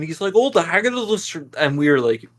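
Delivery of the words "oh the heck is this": thickest exaggerated Scottish accent, pitched up. Speaker imitates a man who was hard to understand; thick Scottish accent. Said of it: "he had the thickest Scottish accent ever".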